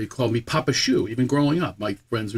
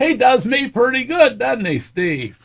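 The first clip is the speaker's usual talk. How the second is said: put-on very high, slow old voice; 12 semitones higher, 5 dB louder than usual. Retelling what an old comedian said backstage: imitating Don Knotts, old. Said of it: "so he did it a different voice".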